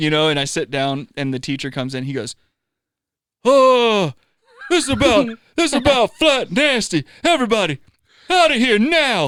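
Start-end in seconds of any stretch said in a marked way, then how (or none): 3.4-9.3 put-on very high, loud, slow old southern man drawl. Speaker retells a teacher coming into class, old southern man voice. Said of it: "like the southern, like old guy".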